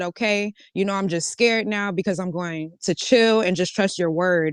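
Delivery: plain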